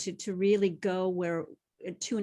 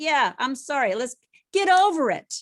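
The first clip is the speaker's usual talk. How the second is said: put-on very loud, high, impatient, dismissive tone; 7 semitones higher, 10 dB louder than usual. Acting out a partner rushing through an apology: imitating a rushed apology. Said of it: "not rushing the apology".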